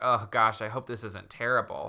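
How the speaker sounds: ordinary talk, nothing marked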